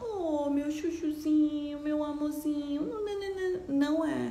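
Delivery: put-on slow, sweet, cutesy, doting baby-talk voice. Contrasting with a firm tone of voice, a baby-talk voice. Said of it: "Eu não tô falando que nem bebezinhos".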